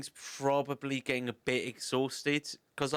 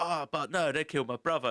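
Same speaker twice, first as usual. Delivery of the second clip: put-on Jamaican accent, put on. Quoting a game character's lines: Wakka voice. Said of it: "basically just Bender with a Jamaican accent".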